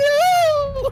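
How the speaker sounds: put-on high, crying little kid's yell.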